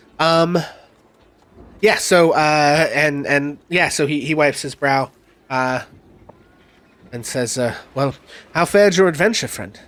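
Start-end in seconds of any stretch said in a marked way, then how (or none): 7.9-9.7 put-on slightly British accent, mid pitch, brisk pace. Voicing Ismark greeting the returning party: Ismark voice, kinda British, middle pitched. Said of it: "kinda British and slightly middle pitched".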